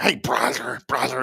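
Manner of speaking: chicken-voiced cartoon character voice. Imitating a former partner calling everyone brother: imitating a Donald Duck-like voice. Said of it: "like Donald Duck".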